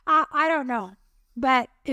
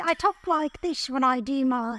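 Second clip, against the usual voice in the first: put-on elderly British woman accent. Showing a co-host how she talks when she does her accent: old British lady accent. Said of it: "Because I always go like this".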